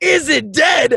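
loud yelling out. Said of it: "I'm yelling out".

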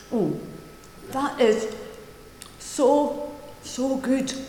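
speech muffled around a mouthful, chewing. Speaking to an audience while eating, talking with mouth full. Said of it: "I'm still speaking with my mouth full".

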